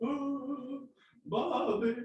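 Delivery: very high cartoon voice, stretched "oh". Describing a YouTube clip the speaker keeps rewatching, in a King of the Hill impression. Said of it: "Nailed that version".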